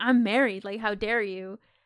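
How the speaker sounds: mock screaming, shouted outburst. Retelling a scene where she yells at the scarecrow: retelling a scream. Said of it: "she just screams out".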